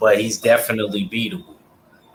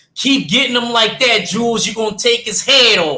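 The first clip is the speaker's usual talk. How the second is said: put-on Philly accent, very high-pitched; 12 semitones higher, 4 dB louder than usual. Retelling what was called out from the corner, imitating a philly accent. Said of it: "In that Philly accent".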